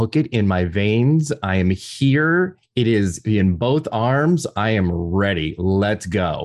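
ordinary talk

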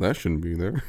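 mock muttering under breath, quiet. Imitating a doctor examining a naked patient: muttering under his breath. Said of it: "the doctor under his breath go".

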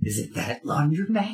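theatrical whisper. A tabletop game player, in character and hiding their own voice: stage whisper. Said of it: "I want to kind of stage whisper".

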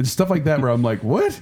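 normal talking voice

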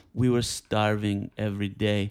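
put-on German-accented voice. Retelling a story in an impression of Werner Herzog. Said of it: "I wish I could do a good Werner Herzog".

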